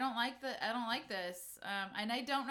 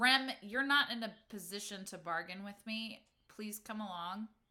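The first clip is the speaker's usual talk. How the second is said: stern, severe, quite firm no-nonsense tone. In a story game, the speaker's character turns and addresses Rem, stern. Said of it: "almost like sternly".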